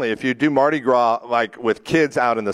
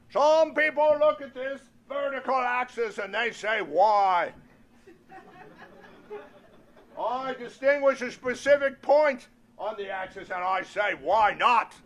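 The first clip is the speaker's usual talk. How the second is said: very high put-on voice with lecturing tone; 11 semitones higher, 7 dB quieter than usual. Doing an impression of Robert Kennedy teaching a geometry class: Robert Kennedy impression. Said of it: "my impression of Robert Kennedy".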